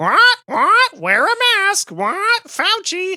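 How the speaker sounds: very high, drawn-out squawking parrot voice. Retelling a comedian's opening bit: retelling a comedian's mocking parrot impression. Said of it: "he comes off the gate doing an impression".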